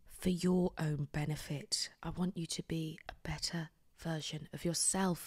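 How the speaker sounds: speaking softly. Addressing viewers before a planned shouting segment, speaking softly. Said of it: "I'm speaking quite softly".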